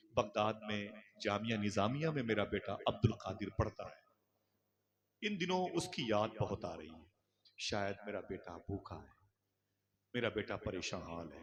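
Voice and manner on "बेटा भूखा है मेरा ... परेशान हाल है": ordinary talk, nothing marked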